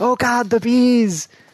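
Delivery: acted very high, very slow, stretched, frantic yelling. Retelling a movie scene of a man yelling about killer bees: imitating someone yelling. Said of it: "he starts yelling about the killer bees".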